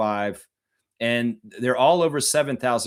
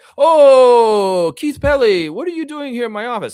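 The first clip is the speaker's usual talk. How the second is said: oh drawn out, very high and very loud; 11 semitones higher, 10 dB louder than usual. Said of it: "if I'm doing Messiah".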